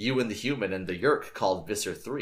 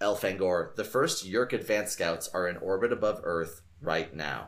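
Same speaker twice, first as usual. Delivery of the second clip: plain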